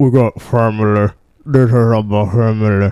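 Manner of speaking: put-on deep gruff voice. Doing a quick impression for the others: Vin Diesel impression. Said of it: "That's my impression of Vin Diesel".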